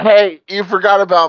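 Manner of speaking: loud, high-pitched calling out. A player's character calls after someone who slinked out of sight: yelling. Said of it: "I'm gonna yell".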